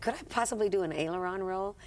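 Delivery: ordinary delivery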